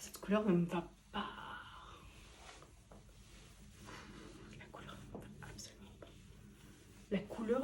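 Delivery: hushed, stunned whisper under the breath. Reviewing a received item while shocked: whispering. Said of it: "je chuchote parce que je suis choquée".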